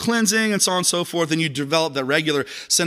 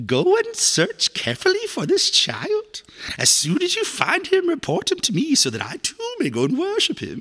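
very high, swooping, theatrical cartoon villain voice; 11 semitones higher than usual. Reading a Bible passage aloud, giving the king's words a Disney villain voice. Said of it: "I want to read it like the villain in like every Disney movie".

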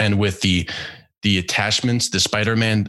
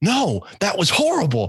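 put-on angry outburst, higher pitch; 11 semitones higher than usual. Retelling own reaction after a botched talent show: retelling own angry outburst. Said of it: "I was so pissed".

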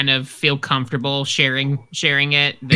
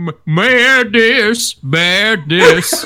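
full cartoon voice, high and loud; 6 semitones higher, 6 dB louder than usual. Joking about a dark version of a game: Goofy voice. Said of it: "and then Goofy's".

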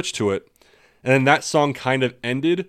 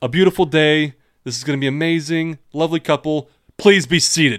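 sarcastic, falsely happy delivery dripping with sarcasm; 3 semitones higher than usual. Recounting how Eddie addressed everyone, retelling Eddie's dripping sarcasm. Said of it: "almost dripping with sarcasm".

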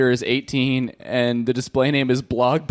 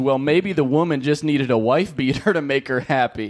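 ordinary delivery

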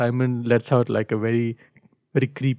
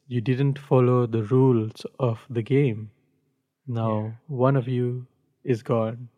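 normal talking voice

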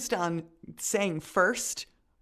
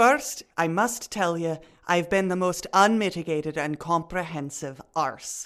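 attempted put-on Scottish accent; 3 semitones lower than usual. Saying a film quote that another speaker set, in a put-on scottish accent. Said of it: "how is the Scottish accent coming along?".

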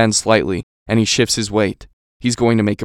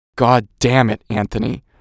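growled, growling tone. Reading the story, the lieutenant speaks to Anthony: growled. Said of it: "the lieutenant growls".

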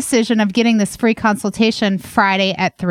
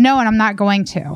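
put-on curt, rude-sounding tone. Retelling how a groomer's client refused to wear a mask: imitating a rude reply. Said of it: "with an attitude".

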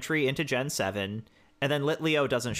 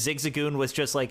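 normal talking voice

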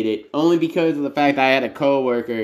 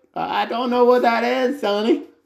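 put-on higher elderly woman's voice; 10 semitones higher than usual. Retelling his encounter with an elderly lady about Dark Souls, the speaker imitates an elderly lady. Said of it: "come across like a 80-year-old like lady".

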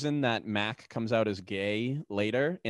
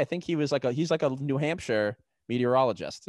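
plain

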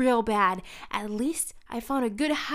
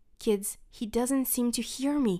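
ordinary talk

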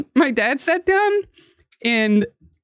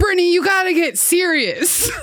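mock angry dad voice, pitched up; 6 semitones higher than usual. Retelling what her dad said as he stormed off over her solitaire: imitating her angry dad. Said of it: "He stormed off and he's like".

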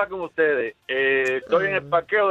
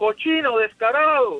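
mock-outraged, angry, acted-out shouting; 4 semitones higher than usual. Retelling a scene, speaker acts out a mother shouting at a man, retelling an outraged shout. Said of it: "empieza a gritar la señora aquella".

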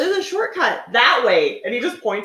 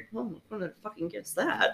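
put-on grumble, much quieter; 13 dB quieter than usual. During the silent game, from somewhere up ahead: grumbling as Sydney. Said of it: "we hear Sydney like grumble something".

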